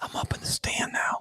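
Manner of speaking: hushed, whispered narrator-style delivery. Mocking bow hunting videos: mock hunting-video whisper. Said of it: "making fun of bow hunting videos where they're like".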